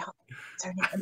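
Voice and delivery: whispered under the breath, quiet. Whispering aside to her husband for help recalling a name; whispering. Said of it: "I'm whispering over to my husband".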